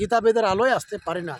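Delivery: quick, tossed-off throwaway delivery.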